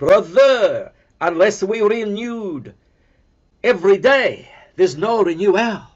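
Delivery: put-on French accent. Retelling a Brother's reply about the church renewal, in a thick French accent. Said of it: "his thick French accent said".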